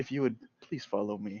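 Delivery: low-voiced, hushed, polite tone. Retelling what a man says after walking up to their table, in a low voice. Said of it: "he looks in a low voice".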